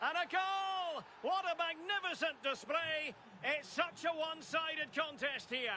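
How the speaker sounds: excited, high shout.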